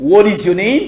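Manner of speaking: speaking with an American accent. Demonstrating the same question in different accents, american accent. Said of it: "Accent américain".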